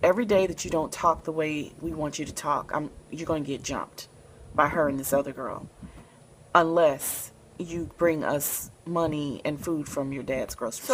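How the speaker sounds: usual speaking voice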